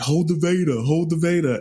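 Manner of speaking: long, high, drawn-out hollered yell. Retelling hearing a guy in a hotel elevator: imitating someone yelling. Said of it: "you hear this guy yelling".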